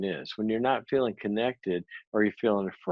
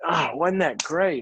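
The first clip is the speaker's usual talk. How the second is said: overly upbeat cheerleader-style cheer, pitched up; 7 semitones higher than usual. Retelling what the CEO said after the meeting: imitating an overly upbeat rah-rah boss. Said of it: "he goes in as Mister Rah-Rah".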